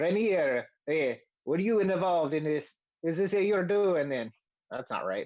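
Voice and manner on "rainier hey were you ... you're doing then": bad, laid-on Italian accent. Recounting a game scene, voicing Volo questioning Rainier, in Volo's bad Italian accent. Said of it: "the bad Italian accent I was doing for Volo".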